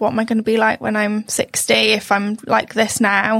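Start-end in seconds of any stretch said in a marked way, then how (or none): none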